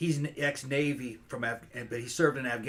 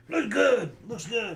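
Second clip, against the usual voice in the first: mock labored, high, raised struggling voice; 10 semitones higher, 6 dB louder than usual. Retelling the father's words near death: imitating a father barely able to talk. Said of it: "he couldn't barely talk".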